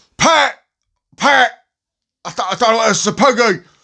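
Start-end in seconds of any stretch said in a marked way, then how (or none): 0.2-1.5 put-on Cockney voice, higher and louder. Doing an impression after being asked for one: Frank Butcher impression. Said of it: "You gotta do your impression".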